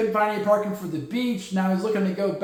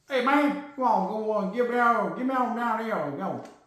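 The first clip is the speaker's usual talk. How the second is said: put-on slow, drawled Texas accent, rambling; 2 semitones higher than usual. Acting out a man calling people to make trades, Boomhauer voice. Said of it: "I don't know if he talks like that in Texas".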